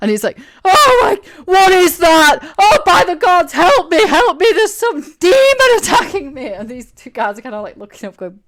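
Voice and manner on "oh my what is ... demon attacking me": high, loud, shrill, drawn-out shrieks of terror. Voicing a burned man who screams as a creature appears: screaming in panic. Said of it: "screaming. And then he starts screaming even more".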